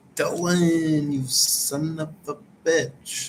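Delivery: very slow, every word dragged out. Imitating how a man says a curse at Dylan, slow drawn-out delivery. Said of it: "He says it all slow".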